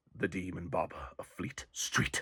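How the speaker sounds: soft, slow, eerie sinister hush.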